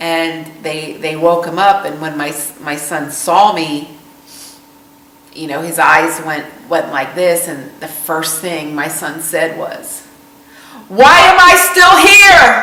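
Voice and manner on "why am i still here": put-on furious, shrill, very high and loud. Retelling the son's first words on waking in the ICU: imitating an angry question. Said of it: "He was so angry".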